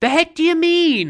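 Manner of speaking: play-acted affronted, indignant tone, very high pitch. Quoting a favorite movie line: imitating Jerry sounding offended. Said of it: "saying it like you're offended".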